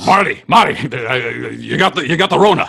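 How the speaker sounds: slow, drawn-out movie scientist voice. Improvising a scene about the coronavirus: Doc Brown impression. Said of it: "What if we are four Doc Browns from Back to the Future".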